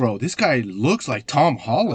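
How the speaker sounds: plain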